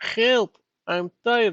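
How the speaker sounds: very high-pitched put-on Russian accent. Repeating a phrase they always think of when tired: Russian accent. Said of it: "in a Russian voice".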